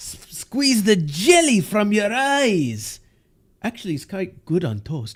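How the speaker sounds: put-on Scottish brogue. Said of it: "doing a Scottish accent's actually pretty hard".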